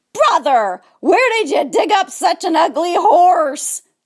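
high, squealing, jeering, mocking voice. A narrator reads the piglets mocking the donkey: squealed. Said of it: "squealed the piglets".

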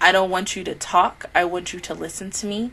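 plain

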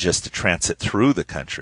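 plain

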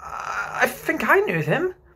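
rather unsure, doubtful, very high and slow. Listening to a story with the others, he answers, rather doubtful. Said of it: "said Michael, rather doubtfully".

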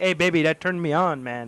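put-on French-Canadian accent. Telling the story of his pickup line, in a GSP-style French-Canadian accent. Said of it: "your French-Canadian pickup lines?".

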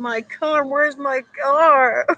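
put-on cranky old man's high, loud, slow, drawn-out angry yell. Joking about how Angry Grandpa will react: imitating angry grandpa yelling. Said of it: "He'll say".

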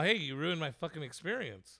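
ordinary talk, nothing marked

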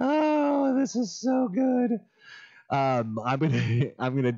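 talking through laughter. Reacting to something the audience cannot see: laughing while talking. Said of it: "I'm sorry, I'm laughing".

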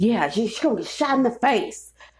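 put-on disgruntled, angry old man voice. Speaker retells an older guy's threat, imitating an angry old person. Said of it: "sound like an angry ass old person".

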